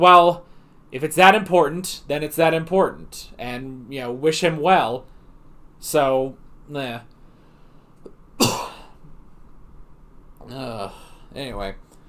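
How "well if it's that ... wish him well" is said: plain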